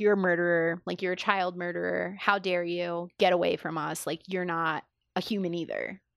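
ordinary talk, nothing marked

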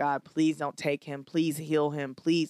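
tearful, crying, begging tone. Retelling a prayer begging god not to take him: reenacting a tearful begging prayer. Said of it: "on my knees crying and begging God".

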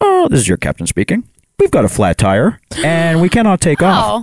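sing-song airline pilot cabin announcer voice. Retelling a delayed flight story, speaker mimics the captain's announcement, airline captain announcement voice. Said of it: "I'll do the proper announcements".

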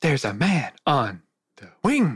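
animated, swooping voice, wide pitch swings on every word. Asked to do it once more: William Shatner impression. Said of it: "let me hear your best one more time".

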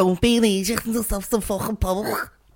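put-on Scouse accent. Repeating Korean Billy's confusing sentence to friends, Korean Billy's Scouse accent. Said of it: "why does he sound like he's from Liverpool".

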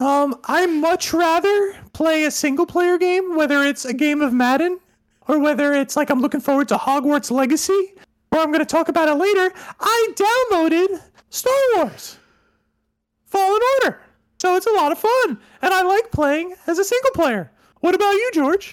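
forced, very high-pitched voice. Speaker must answer a question for one minute in a high-pitched voice. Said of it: "I got to answer this in a high-pitched voice".

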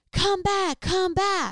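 mock, very high, drawn-out, long-carrying yell. Retelling a brother calling from down the hill: imitating brother yelling. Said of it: "my brother starts yelling".

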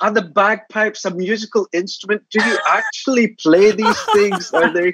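mock American voice, high and incredulous.

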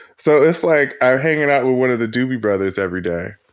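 ordinary delivery

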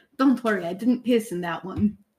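low-voiced aside. A player's character speaking to someone while walking past, in a low voice. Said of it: "in a low voice".

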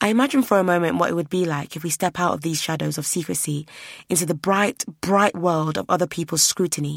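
plain reading voice

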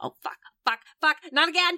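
cursing in a panic. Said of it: "Felix is going like".

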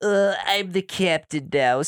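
put-on Israeli accent. Friends joking about a pirate line, one tries it in a put-on Israeli accent. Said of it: "If it was Israel, it'd be more like".

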